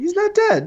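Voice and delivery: high mock voice.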